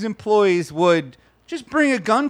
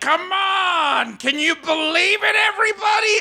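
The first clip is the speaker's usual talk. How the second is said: acted, high, drawn-out scream, held long; 8 semitones higher than usual. Retelling a man in the post office line, retelling his screaming. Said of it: "just kept screaming like".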